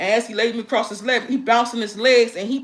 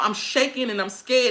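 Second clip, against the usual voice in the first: ordinary talk, nothing marked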